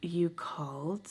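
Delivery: caught off guard, astonished, acted. Retelling answering an unexpected phone call: imitating own surprised reaction. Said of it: "I was so surprised".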